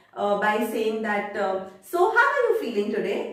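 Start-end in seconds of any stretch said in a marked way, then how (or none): 1.8-3.4 high-pitched, lively, enthusiastic voice with bright energy. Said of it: "shows a lot of enthusiasm in his talks".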